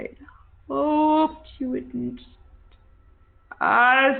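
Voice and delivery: slow, high, warped, distorted, reluctantly pained creature voice. Voicing a melting creature speaking to the players: distorted, pained creature voice. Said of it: "its voice is distorted in this same way".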